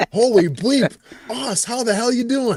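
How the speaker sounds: put-on classic Midwestern accent, pitched high. Retelling how a man greeted the speaker on seeing him, midwestern accent. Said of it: "in that classic Midwestern accent".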